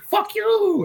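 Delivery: play-acted shrill yell in a Russian accent. Retelling how a woman reacts whenever she gets into danger; imitating her yelling. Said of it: "she's like yelling at".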